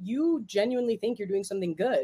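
ordinary delivery

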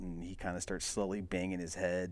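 ordinary talk, nothing marked

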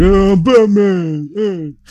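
very high, loud dumb-guy voice. Pitching a joke about Batman talking differently, dumb-guy Batman voice. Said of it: "Batman had a dumb guy voice".

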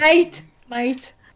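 loud, fake put-on Australian accent. Joking after others suggest an Australian accent: put-on Australian accent. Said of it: "Et avec un accent australien".

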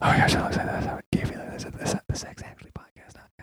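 hushed, very quiet, breathy, gossiping whisper. Imagining small-town fans spotting the podcasters at a gas station: imitating people whispering.

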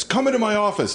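big, booming, very high shout. Retelling Rob Reiner addressing the secretarial pool: big booming Rob Reiner voice. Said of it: "in his big booming Rob Reiner voice".

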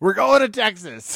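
loud, high, mock rousing rally-style shout. Retelling something a man screamed in the news, retelling a campaign-style scream. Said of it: "He sounded like a presidential campaign".

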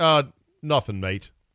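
put-on easygoing New Zealand accent. Retelling a caddy's reply to a golfer: New Zealand accent. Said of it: "in his New Zealand accent".

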